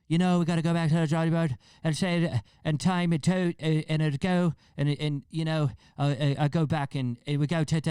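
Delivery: put-on slurred, high, loud Irish accent. Imitating a fighter's interview right after a knockout: imitating groggy Conor McGregor. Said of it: "it was just like all these T's".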